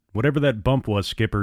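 ordinary talk

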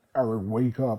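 loud demon voice, neither male nor female. Retelling waking on a stretcher to someone saying his name, demon-like voice. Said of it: "It kind of sounded like a demon".

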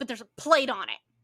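mock angry, pissed-off voice. Retelling a customer who yelled at them at the register, imitating an angry customer. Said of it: "most pissed off".

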